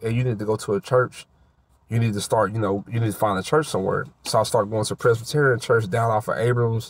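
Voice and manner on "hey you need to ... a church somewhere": ordinary delivery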